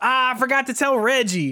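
high, startled, dismayed gasp.

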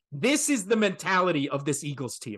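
usual speaking voice

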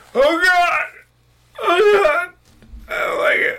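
very high, loud, breathless winded gasping cries. Describing a game character crashing his bike, acting out Billy being winded. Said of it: "when somebody gets the air knocked out".

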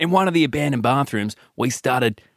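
put-on unintended Australian accent creeping in. Continuing a story after a listener says go on, Australian accent. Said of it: "I've changed to Australian".

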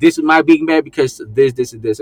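ordinary delivery

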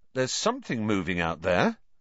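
ordinary delivery

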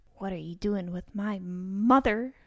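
quiet whispering. Crouching next to a mumbling man, whispering into his ear. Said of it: "whisper into his ear".

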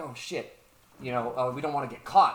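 usual speaking voice

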